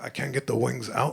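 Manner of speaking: quiet, hushed, confiding voice, under the breath. Retelling a return at a store counter, leaning in: imitating own half-whisper. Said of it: "I just whisper, I just lean in".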